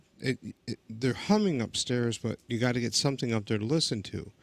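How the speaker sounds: ordinary delivery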